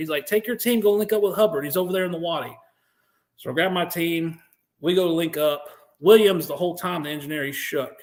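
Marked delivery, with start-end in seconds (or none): 0.3-2.6 mock screaming, higher pitch. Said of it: "Alet's screaming at me".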